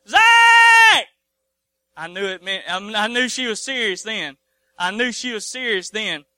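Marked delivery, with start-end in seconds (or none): 0.2-1.1 high-pitched, loud holler. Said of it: "when she come out that door the second time and said".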